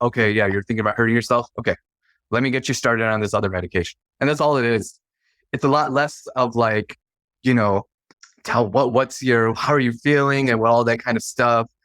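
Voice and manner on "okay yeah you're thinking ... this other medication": fast, flat, matter-of-fact deadpan delivery. Describing a typical prescriber's conversation with patients, mimicking a deadpan delivery. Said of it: "they're very like just deadpan".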